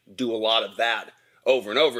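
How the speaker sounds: plain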